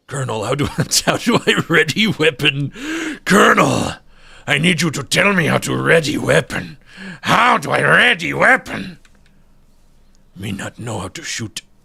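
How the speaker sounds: gravelly, gruff put-on voice. Asking the Colonel how to ready a weapon: gravelly put-on voice. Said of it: "doing that gravelly ass voice".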